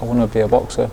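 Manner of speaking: ordinary talk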